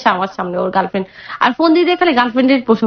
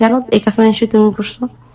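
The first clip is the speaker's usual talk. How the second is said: ordinary delivery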